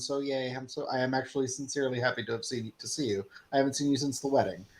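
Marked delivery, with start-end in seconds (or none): 0.0-3.2 suppressed happiness, spoken more quietly. Playing Calders greeting Lore again, flat, emotionless happiness. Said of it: "conditioned to not actually show positive emotion".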